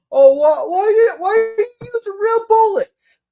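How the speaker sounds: high, loud mock woman's voice. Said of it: "she's like".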